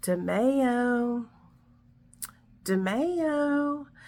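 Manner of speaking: eerie, weird, creepy voice, lingering and drawn out. Retelling a man repeating the speaker's last name: imitating a creepy voice. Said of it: "in this like weird kind of like creepy voice".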